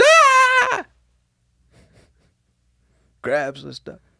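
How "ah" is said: very high, loud scream. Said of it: "a lady walks in and screams".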